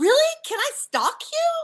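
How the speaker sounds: very high, loud, swooping, eager excited outburst. Retelling meeting a puppeteer, a blurted gasp. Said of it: "I blurted out".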